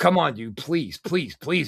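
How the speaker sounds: mock pleading, begging acted out. Speaker retells a man pleading with him not to fight, imitating pleading. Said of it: "Chris is like pleading with me".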